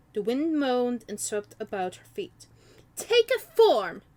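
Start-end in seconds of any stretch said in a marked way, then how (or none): 3.0-4.0 very high, sharp, loud snapping. Narrating a story, a woman demands an unseen presence show itself, snapping. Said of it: "she snapped".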